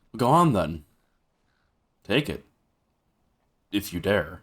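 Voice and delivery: put-on teasing, daring tone. A listener repeating a character's line back, in an imitated I-dare-you tone. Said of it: "That sounds weirdly like I dare you kind of kind of voice".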